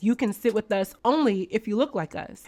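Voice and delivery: ordinary talk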